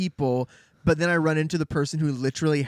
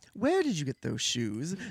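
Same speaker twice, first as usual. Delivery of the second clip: pressing, intense, hushed delivery; 5 dB quieter than usual. Retelling how a man first confronts a girl about her shoes, imitating an intense man. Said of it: "he's pretty intense at first".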